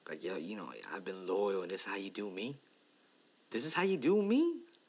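put-on hurt, wounded tone. Voicing a man's reaction after the Giants didn't feel the same, acting out a hurt tone. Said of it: "You can tell he's hurt".

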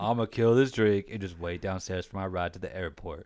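put-on flat emotionless voice. Quoting a man's reply again, imitating a flat emotionless delivery. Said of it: "That's literally how he says it too".

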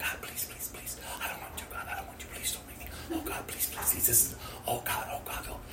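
put-on desperate, frantic pleading, whispered and rushed. Retelling a nervous wait to introduce oneself at training: retelling own desperate begging. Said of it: "I'm literally just begging God".

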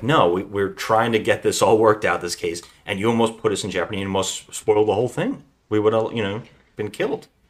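normal talking voice

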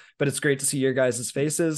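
plain

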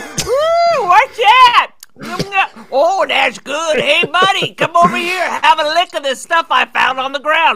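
put-on high, loud old-prospector holler, stretched ooh. Acting out an old prospector at a mine: Gabby Hayes voice. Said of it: "it's like Gabby Hayes walks up".

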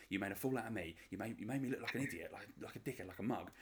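put-on full South London accent, ranting. Retelling a reality show argument, imitating a woman's South London rant. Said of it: "went full, like, South London on him".

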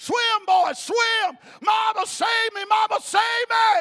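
very loud, shrill, high, frantic panicked screaming. Telling of a boy chased by an alligator in a pond, imitating a scream. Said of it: "screaming at mama, screaming".

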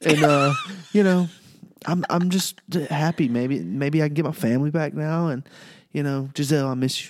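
high, put-on weepy sobbing voice. Imitating Tom Brady's retirement video with fake tears. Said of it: "Fake tears".

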